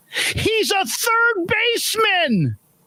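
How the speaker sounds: very high, shrill yell at full volume. Retelling how the athletic director sprinted over and yelled: retelling a yell at full voice. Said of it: "at the top of her lungs, she yells".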